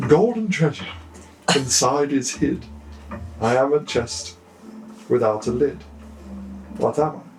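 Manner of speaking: put-on laid-on, upper-crust posh accent. Repeating the riddle after a listener found the accent too thick: more posh accent. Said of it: "let me try and do it like a more posh accent".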